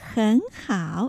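hen said with rising second tone. Third-tone sandhi in hen hao: rising second tone on hen. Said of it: "前の很のところを2 声と発音しますから很好と言います".

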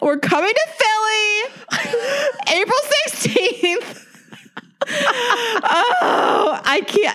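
very high, slow, drawn-out, near-tears overwhelmed excitement. Announcing a hometown show date to the other speaker, overwhelmed with excitement. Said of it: "I am freaking out right now".

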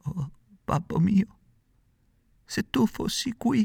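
faint, slow, stammering near-death voice. Narrator reads a character calling to his father, stammering, nearly dying. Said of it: "balbettò quasi moribondo".

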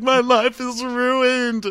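put-on very high, very slow, drawn-out weepy sobbing wail. Retelling what he said when he finally cried, imitating him crying. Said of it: "And then finally he really was".

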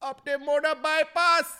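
very loud, high-pitched put-on Jamaican accent. Acting out a signal given while hunting lions: imitating a jamaican accent. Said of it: "that was Jamaican".

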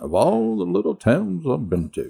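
put-on narrator-style voice. Asked by another speaker to read the text in Morgan Freeman voice. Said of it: "why don't you do Morgan Freeman's voice?".

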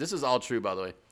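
high, loud robotic voice. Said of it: "you finished strong with the last word".

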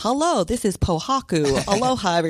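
slow, drawled, exaggerated accent.

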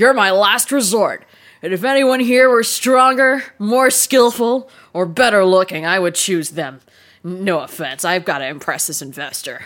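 shady, hulking, giant minotaur character voice. Game narrator voices the minotaur addressing Merritt, booming Grimbly Wothis voice. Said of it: "Grimbly Wothis booms".

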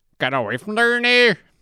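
grumpy tone, very high pitch. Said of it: "in his voice".

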